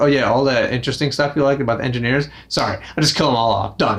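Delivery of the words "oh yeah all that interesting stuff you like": usual speaking voice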